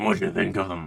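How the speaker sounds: booming voice, rough and loud, hardly held back. A captain claps you on the back in Blackburn Keep, booming Captain Brath Stormsurge voice. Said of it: "booming voice of Captain Brath Stormsurge".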